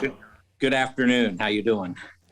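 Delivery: out of breath, audibly panting. Greeting the others just after a run, out of breath. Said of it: "He's out of breath, literally".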